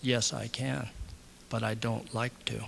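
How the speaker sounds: slow, low, hushed, drawn-out, deliberate murmur. Recounting Jeff finally answering the speaker's question, Jeff's slow, low voice. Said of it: "slowly and lowly, low voice".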